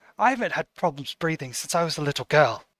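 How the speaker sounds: soft, a little shocked, caught off guard. Voicing a woman answering someone who abruptly changed the subject, a little shocked. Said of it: "She looks at you like a little bit shocked".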